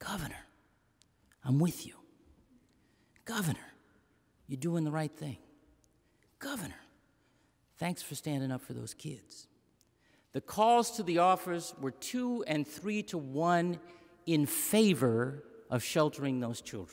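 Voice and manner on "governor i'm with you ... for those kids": soft, hushed, confiding half-whispered murmur. Retelling what supporters in a store half-whispered: imitating a half-whisper. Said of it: "someone came up and whispered".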